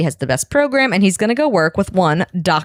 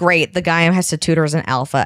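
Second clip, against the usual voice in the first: ordinary talk, nothing marked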